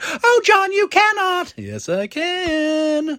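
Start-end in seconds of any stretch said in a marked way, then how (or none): 0.0-1.5 very high voice, pushed very high. Promoting an event, imitating the absent co-host: imitating Bonnie Gordon. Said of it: "but I can imitate her".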